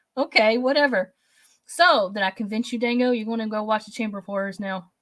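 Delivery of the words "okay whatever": snide, sarcastic, dismissive tone. Imitating how another speaker's comment sounded: imitating a sarcastic tone. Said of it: "sarcastic, like".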